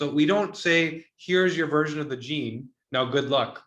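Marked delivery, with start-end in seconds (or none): none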